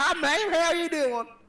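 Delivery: very high, silly, goofy put-on drifter voice. Retelling a prank on a lady in a store: retelling a funny put-on homeless guy voice. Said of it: "I walked away like I was a homeless guy".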